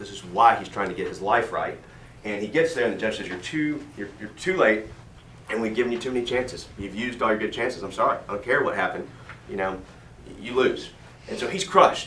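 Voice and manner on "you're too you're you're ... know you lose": ordinary talk, nothing marked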